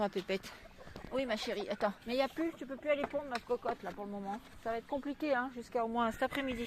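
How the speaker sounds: gentle pet-talk cooing.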